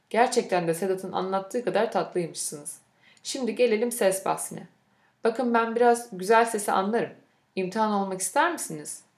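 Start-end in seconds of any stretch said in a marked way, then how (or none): none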